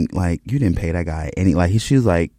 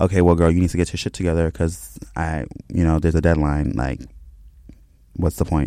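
usual speaking voice

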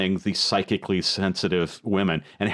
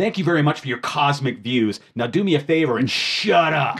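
high, sudden, shouted yell; 6 semitones higher, 3 dB louder than usual. Recapping a scene where he yells at her, retelling a yell. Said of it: "he just yells at her".

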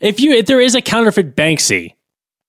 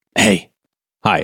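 quiet, hushed whisper; 11 semitones lower than usual. Asked by his co-host to say hi for a trailer: whispering. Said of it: "You don't have to whisper".

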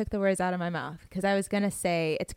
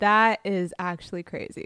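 usual speaking voice

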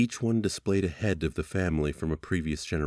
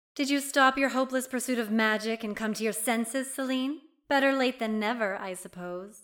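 smug, very high, self-satisfied mockery. Celine's eldest sister speaks to celine: smug. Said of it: "smiled smugly".

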